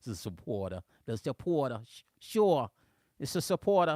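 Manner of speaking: put-on New Jersey accent, done for show. Greeting a supporter on a livestream, in a New Jersey accent. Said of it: "here's my New Jersey accent".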